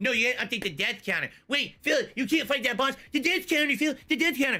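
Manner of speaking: acted-out high, jeering, needling taunting voice. Gamer imitates chat nagging him mid boss fight, in a mocking voice. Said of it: "This is how it sounds to him in a mocking voice".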